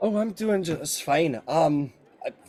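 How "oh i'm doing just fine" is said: put-on British accent, higher pitch, slow pace. Voicing a character answering a greeting: copied british accent. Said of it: "oops, just copied your accent".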